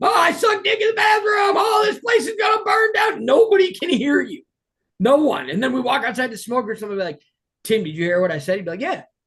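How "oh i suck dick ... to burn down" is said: very high, pitched-up, hollered yelling. Acting out yelling nonsense over loud music nobody can hear, imitating someone yelling nonsense. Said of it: "Just yelling shit".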